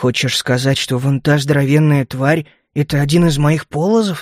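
ordinary delivery

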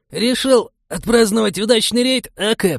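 put-on raspy, squeaky teen voice, very high. Someone calls out to a man drinking at a table, hoarse and squeaky voice. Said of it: "Голос звучал хрипло и пискляво".

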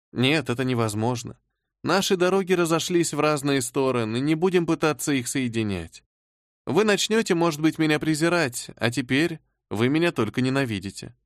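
ordinary delivery, nothing marked

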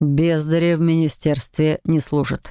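plain reading voice

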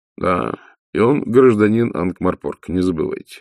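plain reading voice

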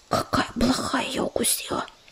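whispering. A listener whispers to her companion while a healer speaks, whispered in his ear. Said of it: "шепнула рыжинка на ухо Ежевике".

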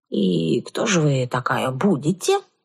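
cautious. A villager asks a stranger at the well who she is, cautious. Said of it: "осторожно поинтересовался селянин".

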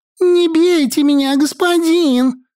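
very high, unpleasant, nasty squeaky squealing voice. First-person narrator reading, a captive woman pleading with soldiers, nasty squeaky voice. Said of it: "Противным писклявым голосом заверещала я".

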